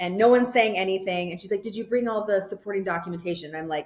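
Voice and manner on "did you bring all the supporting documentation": mock flat, dry, emotionless delivery. Retelling the lady's question in her office: imitating an emotionless, dry voice. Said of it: "emotionless and dry".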